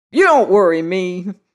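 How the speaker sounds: loud, shrill, hot, heated snap back. Uncle Huey answers the first speaker's talk of nuptials, snapping with shrill heat. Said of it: "snapped Uncle Huey with shrill heat".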